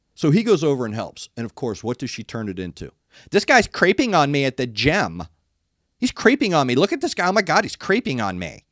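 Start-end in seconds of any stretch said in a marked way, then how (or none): 3.3-8.6 put-on catty, mean Valley Girl voice. Imitating a gym-goer's post about a man helping her: imitating a Valley Girl mean girl voice. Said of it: "Valley Girl, bitchy, mean girl voice".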